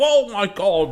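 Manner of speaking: very high, startled, blurted-out delivery. Showing how a kid who nearly gets caught would react, as a Will Poulter impression. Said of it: "like the thing that Will Poulter does".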